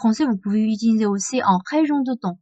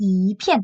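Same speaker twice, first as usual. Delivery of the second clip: yi said with rising second tone. Explaining a tone change before a fourth-tone classifier: second tone on yi. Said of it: "ça deuxième ton, c'est 一片".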